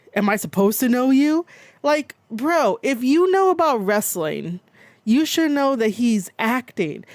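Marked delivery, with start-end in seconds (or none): 0.2-1.5 put-on macho, manly tough-guy voice. Recounting a live stream, the speaker imitates Raja's manly tone. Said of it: "manly kind of way".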